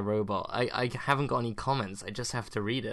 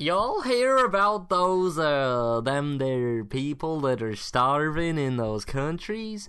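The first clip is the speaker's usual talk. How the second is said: poor put-on American accent; 4 semitones higher, 5 dB louder than usual. Repeating a line after a listener mocks the previous attempt, bad put-on American accent. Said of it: "slightly better".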